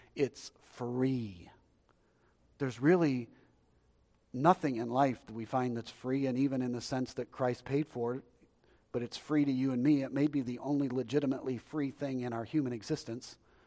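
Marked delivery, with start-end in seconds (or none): 0.2-1.5 very slow, deliberate, drawn out word by word. Speaking to people watching online, say it really slow. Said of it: "let me say this really slow".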